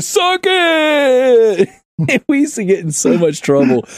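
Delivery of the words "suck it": wrestler-style scream, as in the ring. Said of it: "he'd scream in the hallway".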